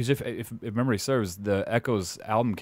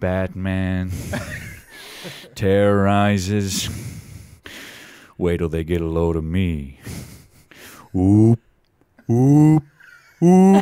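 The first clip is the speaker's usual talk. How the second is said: nasal, creepy put-on voice, louder; 3 semitones lower, 7 dB louder than usual. Showing others how to do an impression, talking nasal through the nose. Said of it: "the thing about Jack Nicholson".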